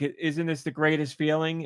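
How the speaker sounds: normal talking voice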